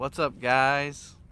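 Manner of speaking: put-on mellow video-host voice. Imitating how Chris always opens a video, in a mellow Chris video intro. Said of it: "It's kind of like mellow".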